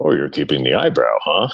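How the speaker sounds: very low, fatherly dad voice. Retelling a photo exchange, the speaker quotes his dad's reply, imitating his dad. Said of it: "dad voice".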